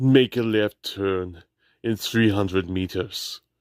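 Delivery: smooth Austrian accent, sat-nav style delivery. Giving GPS directions as Arnold: smooth Arnold voice, Austrian accent. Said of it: "I was doing a G P S voice with the Arnold voice".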